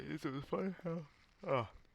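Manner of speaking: soft, under-the-breath yawning through the words. Video maker talking about a game they played, yawning. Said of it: "Sorry, yawning".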